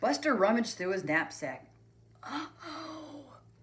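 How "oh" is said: quiet, soft, very high, drawn-out "uh-oh". Buster rummages through his knapsack and reacts, said quietly. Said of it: "he said quietly".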